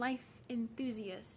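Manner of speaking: stress on "life enthusiast". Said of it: "Emphasis on the life enthusiast".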